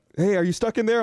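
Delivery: loud calling out, yelling. Retelling a repairman calling up an elevator shaft: imitating someone yelling. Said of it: "yelling from the bottom of the shaft".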